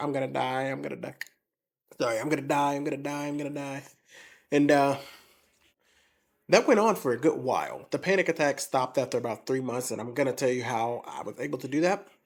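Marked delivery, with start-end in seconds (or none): 0.0-3.8 imitated crying. Retelling calling a friend every day during panic attacks: imitating own past crying.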